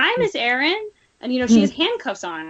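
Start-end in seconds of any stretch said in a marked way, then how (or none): 0.0-0.9 put-on high, childlike little-girl voice. Speaker recalls an interviewee coming in and greeting her in a little girl voice. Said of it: "she comes in in this little girl voice".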